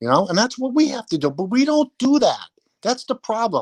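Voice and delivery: high-pitched yelling, complaining. Complaining that the team won't rebuild the right way: yelling. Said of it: "you're yelling at me like I'm the one".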